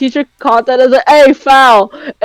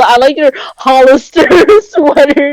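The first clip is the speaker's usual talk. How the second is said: ordinary talk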